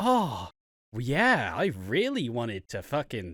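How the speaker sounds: loud, swooping, clumsy sarcasm that misses the mark. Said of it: "shitty sarcasm that's not sarcasm".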